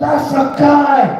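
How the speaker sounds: acted yelling. Speaker recounting what a man shouted after looking at her door, retelling a man yelling. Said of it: "He's yelling like".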